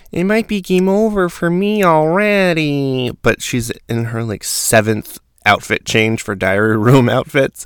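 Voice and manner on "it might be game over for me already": very high, whiny delivery. Recapping a reality show, imitating Nicole complaining in the diary room in her whiny voice. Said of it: "complaining in the diary room with her really whiny voice".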